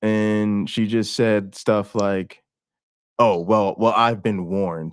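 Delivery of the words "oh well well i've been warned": mock guarded, defensive, on-the-back-foot tone. Retelling a talk with mom about religion: imitating mom sounding defensive. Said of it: "she got really defensive".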